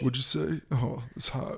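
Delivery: slow, sparse, minimal, very limited bare-bones delivery. Imitating how a contestant might talk: Karl-Anthony Towns voice. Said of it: "does he talk like Karl Anthony Towns?".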